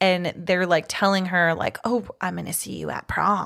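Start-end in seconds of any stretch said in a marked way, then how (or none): 1.8-3.5 put-on creepy voice. Retelling a film scene where a caller phones a character: creepy caller voice. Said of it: "they have a super creepy voice".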